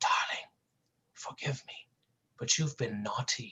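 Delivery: delicate, soft, hushed, intimate whisper.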